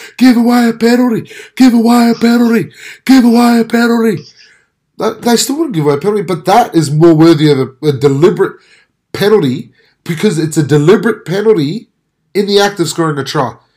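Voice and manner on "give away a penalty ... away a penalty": high screaming, repeated over and over. Retelling what they screamed out while watching: imitating own screaming. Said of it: "I'm screaming out, going".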